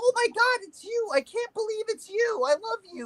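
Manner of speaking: put-on very high, giddy, squealing starstruck fangirl gush. Retelling a commentator meeting Andrew Tate: imitating a giddy fan. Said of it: "this man acted like a fucking little girl".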